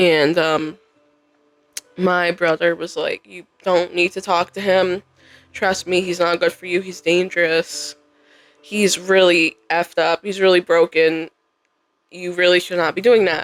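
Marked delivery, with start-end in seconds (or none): none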